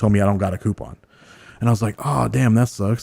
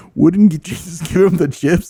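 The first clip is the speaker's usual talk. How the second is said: half crying, teary, high-pitched, lost and confused voice; 8 semitones higher, 4 dB louder than usual. Retelling sitting in the office as a kid, retelling own crying. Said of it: "I'm kinda crying to myself a little bit".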